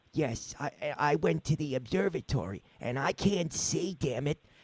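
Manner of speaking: very soft voice, almost under the breath. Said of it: "Sal's is like".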